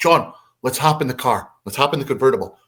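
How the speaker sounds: ordinary talk, nothing marked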